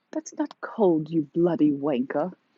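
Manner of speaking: put-on elderly British woman's voice and accent. Imagining how someone in england would answer her, in an old woman british accent. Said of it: "That's my old woman British accent".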